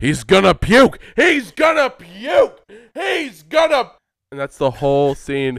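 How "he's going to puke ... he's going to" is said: very high, shrill scream, escalating and rising. Act out Vince McMahon in his office at his first meeting with Puke, screaming Vince McMahon impression. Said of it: "He's screaming it in his office".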